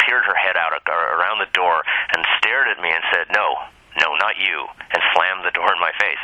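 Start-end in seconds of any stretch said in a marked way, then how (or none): 3.3-4.6 put-on ominous old-woman voice, slower. Speaker retells an old woman at the door turning them away, imitating an ominous voice. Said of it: "she said it in that ominous voice".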